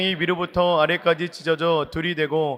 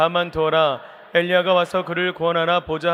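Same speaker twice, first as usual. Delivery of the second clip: usual speaking voice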